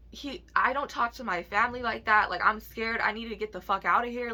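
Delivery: ordinary delivery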